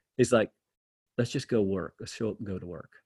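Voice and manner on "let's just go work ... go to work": low, flat, stoic, level monotone. Retelling what dad always said in tough times: imitating a monotone voice. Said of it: "he was just monotone".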